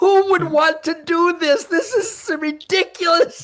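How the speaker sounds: talking while laughing. Retelling being stuck dragging a deer at night: retelling own words while laughing. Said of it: "and I'm laughing, going".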